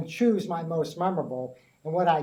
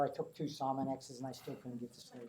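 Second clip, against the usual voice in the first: plain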